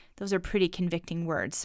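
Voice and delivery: ordinary talk, nothing marked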